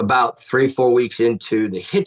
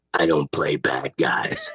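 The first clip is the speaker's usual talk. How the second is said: put-on low, slow, hissing Dutch accent. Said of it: "hisses in that Dutch accent".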